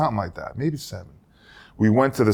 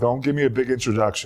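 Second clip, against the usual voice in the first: usual speaking voice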